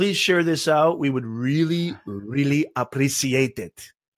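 loosely done, fake Austrian accent. Podcast host giving a shout-out to a listener, put-on Austrian accent. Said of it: "I don't know what accent that was, but I went there".

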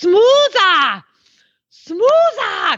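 put-on German accent, pitched very high. Recalling being corrected in training by a German lady; German accent. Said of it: "in this German accent".

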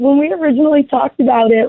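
laughing while talking. Maddie, told to go ahead, starts to answer, laughing. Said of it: "I'm laughing because it's just crazy to me".

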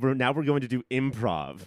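ordinary delivery

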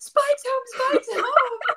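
shrieking, very high, repeated screaming. Retelling the brother opening the door as the dog showed up, retelling his scream. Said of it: "He was screaming like".

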